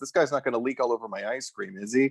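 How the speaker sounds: plain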